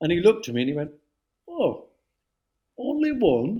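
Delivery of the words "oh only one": very high, sing-song, swooping voice. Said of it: "that's a great impersonation".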